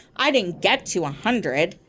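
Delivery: ordinary delivery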